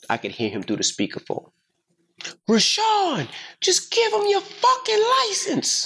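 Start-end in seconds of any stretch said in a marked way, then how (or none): 2.5-5.9 put-on very high, stretched-out dad yell. Retelling his dad yelling at him through the speakerphone: imitating his dad yelling. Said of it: "So my dad is yelling".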